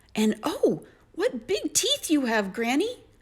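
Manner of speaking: high, very wobbly, trembling, quavering voice. Reading a fairy tale aloud, the frightened girl's line: very wobbly voice. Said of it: "in a very wobbly voice".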